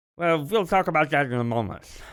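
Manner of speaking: odd, ridiculous put-on old voice. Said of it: "that was my old voice".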